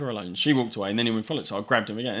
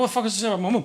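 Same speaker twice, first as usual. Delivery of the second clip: put-on thick Irish accent, higher; 11 semitones higher, 3 dB louder than usual. Retelling a young kid confronting him outside a shop: imitating a thick Irish accent. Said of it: "fucking thick Irish accent".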